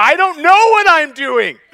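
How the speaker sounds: high, loud, helpless, bewildered exclamation. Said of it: "I'm like".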